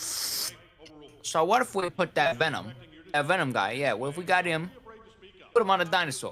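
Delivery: put-on New York mobster accent. Acting out a toy company meeting: New York mobster voice. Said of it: "New York mobster sound dude smoking a fat cigar".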